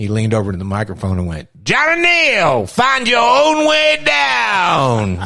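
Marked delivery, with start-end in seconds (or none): 1.6-5.3 very slow, high drawl, stretched with downward swoop. Retelling how Johnny leaned to the microphone: imitating a Wolfman Jack-like voice. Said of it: "he sounded like Wolfman Jack".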